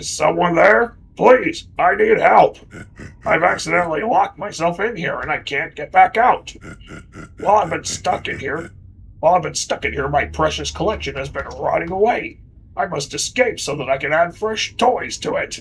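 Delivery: rough-sounding voice calling out. Game narrator voicing someone calling from behind a locked pantry door, rough voice. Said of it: "a rough voice suddenly calls out".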